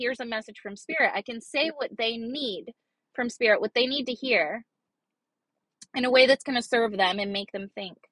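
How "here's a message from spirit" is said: plain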